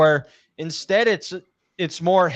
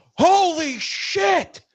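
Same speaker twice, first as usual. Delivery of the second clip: mock, very high, shrill, full-lung shriek; 12 semitones higher than usual. Retelling the moment Kentucky hits the shot while at work; retelling a scream at top of lungs. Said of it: "I scream at the top of my lungs".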